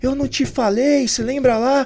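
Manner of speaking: acted, very high, tearful crying yell. Retelling a phone call from the speaker's mother after a win: imitating someone crying and shouting. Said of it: "chorando, gritando e falando".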